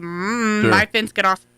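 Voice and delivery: slow, quiet, indoor-level dog voice. Imagining the dog seeing a squirrel on the fence: voicing the dog. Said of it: "he's gonna be like".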